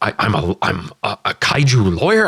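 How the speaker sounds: slow, drawn-out, schlubby voice with swooping, wandering pitch. Imitating a schlubby lawyer character: Paul Giamatti voice. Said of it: "I gotta hear Paul Giamatti again, uh, to do a decent impression".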